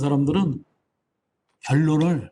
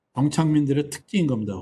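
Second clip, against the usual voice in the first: ordinary delivery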